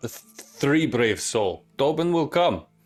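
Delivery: mild called-out voice. Voicing a character calling out to the crowd: yelling in character. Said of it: "Pilgrim yells out".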